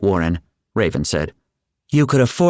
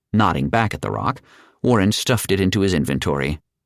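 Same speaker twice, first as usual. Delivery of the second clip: plain reading voice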